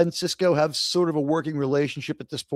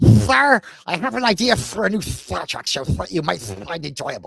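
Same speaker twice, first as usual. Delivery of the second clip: put-on cartoon duck voice. Showing the other speaker his cartoon impression, Daffy Duck voice. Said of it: "That's Daffy Duck".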